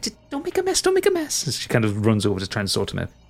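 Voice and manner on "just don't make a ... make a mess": very high, anxious fussing cry. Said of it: "And Briar's like".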